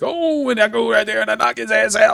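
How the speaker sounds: announcer voice pitched very high. Wrestling fan recalls a wrestler's old bit, doing Booker T's announcer voice. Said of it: "he had like an announcer voice".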